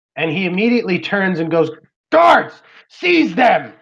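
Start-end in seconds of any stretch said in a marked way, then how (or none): 2.1-3.6 shrill, furious, enraged shouting. Narrating a scene, the commander turns on his guards, Breakbone's angry command. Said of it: "he begins to get very angry".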